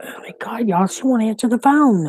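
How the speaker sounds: high, rushed, freaking-out panicked blurt. Waiting for someone who won't answer the phone: panicking. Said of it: "I start freaking panicking".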